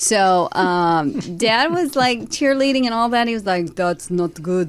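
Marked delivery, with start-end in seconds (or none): 3.7-4.7 very bad fake Polish accent. Quoting the speaker's polish dad reacting to dating, in a bad polish accent. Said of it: "the worst Polish accent".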